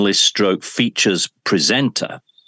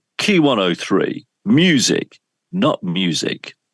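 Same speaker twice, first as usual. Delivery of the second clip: slow, announcer-style voiceover delivery. He did the voiceovers, speaker impersonates him: imitating the voiceover man. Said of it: "I'm going to try and impersonate him now".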